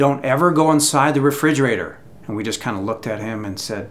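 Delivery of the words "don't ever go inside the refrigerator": plain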